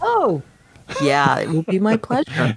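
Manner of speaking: swooping voice, words breaking up with laughter. Answering a joke about watching every Marvel movie, laughing while talking. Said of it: "I can say that without laughing".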